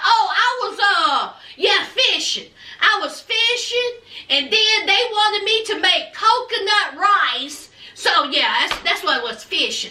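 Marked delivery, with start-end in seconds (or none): none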